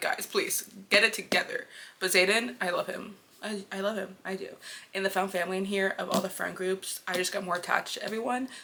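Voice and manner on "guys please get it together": normal talking voice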